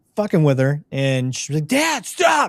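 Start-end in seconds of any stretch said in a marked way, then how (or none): 1.7-2.5 put-on very high, shrill, freaking-out yell. A dad retelling teasing his daughter, imitating her freaking out. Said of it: "she'll fucking freak out".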